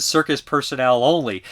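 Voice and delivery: ordinary talk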